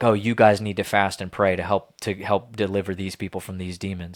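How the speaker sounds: normal talking voice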